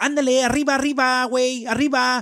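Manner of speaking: very loud, shrill, fast cartoon Mexican accent. Mocking how people imitate a friend's speech: Speedy Gonzalez impression. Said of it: "speaking straight like fucking Speedy Gonzalez".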